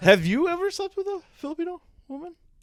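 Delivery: voice jumps way up, very high and rising. Asking the others a question: voice going high. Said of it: "why did my voice get high there?".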